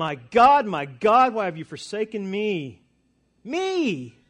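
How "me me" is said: heavy emphasis landing hard on "me". Retelling Jesus's cry of abandonment, stress on 'me'. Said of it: "Could you imagine the emphasis on me?".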